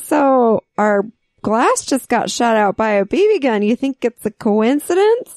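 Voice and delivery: plain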